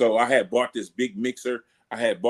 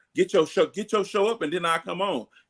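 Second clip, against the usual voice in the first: acted, firm, aggressive delivery with pitch raised; 7 semitones higher than usual. Retelling how a friend answered about guesting on the show: imitating an aggressive retort. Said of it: "He said it like that, real aggressive like that".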